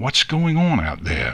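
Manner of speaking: ordinary delivery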